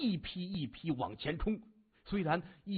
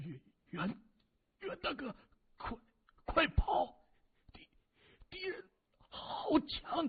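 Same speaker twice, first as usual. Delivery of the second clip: very high, quavering, trembling voice; 10 semitones higher than usual. A wounded man, cut down at his companion's feet, speaks in a trembling voice. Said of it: "颤声说".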